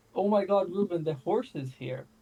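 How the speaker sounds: loudish, carrying call, half spoken, half shouted. Retelling calling out across about a hundred meters, retelling a soft shout. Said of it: "I pretty loudly say or softly shout".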